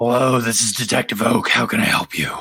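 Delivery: gruff and thoroughly fed up tone. Narrator answers the players' phone call as the detective: gruff Detective Oak voice. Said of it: "gruff, done with your shit voice".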